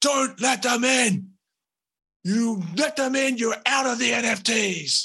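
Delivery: very high, shrill, commanding shout. Game master voicing the early adopter at the top, yelling out to everyone. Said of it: "And the early adopter at the top is just going to yell out to everyone".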